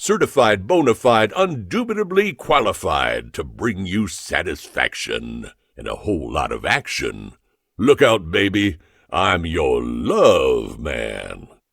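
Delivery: deep but resonating voice. Reading a story where a character first speaks on air: deep but resonating voice. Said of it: "in a deep but resonating voice articulated".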